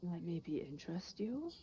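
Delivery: soft, hushed half-whisper. A character in a role-play game offers the players an item, half-whispering. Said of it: "he whispers".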